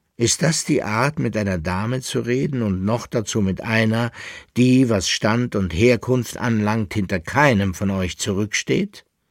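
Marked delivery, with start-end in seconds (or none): none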